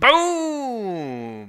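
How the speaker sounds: swooping, stretched-out shout, very loud and very high. Playing golf, the speaker reacts to a putt for par, yelling. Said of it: "Sorry for yelling".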